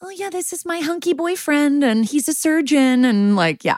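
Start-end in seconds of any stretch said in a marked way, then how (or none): 0.0-3.0 very high, squeaky little mouse voice. Retelling what the girlfriend says about her boyfriend: imitating mousy Cora Kennison. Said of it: "she's like a little mousy mouse".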